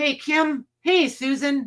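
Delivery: high, loud yelling across a distance. Speaker calls out greetings to listeners by name: yelling. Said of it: "I don't know why I'm yelling".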